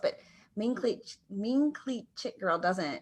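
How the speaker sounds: very slow, drawn-out delivery.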